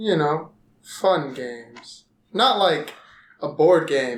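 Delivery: very low, downcast, depressed delivery. Describing the idea of fun games to the others, sounding depressed. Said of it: "You sound depressed as you say".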